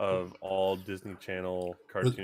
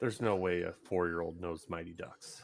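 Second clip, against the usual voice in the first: usual speaking voice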